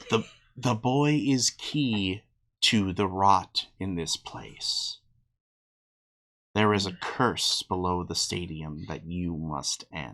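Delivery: whispered goddess voice. Voicing Hecate speaking into a player's ear: Hecate whispering. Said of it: "you hear Hecate whisper in your ear".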